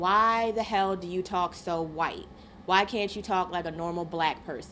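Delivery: plain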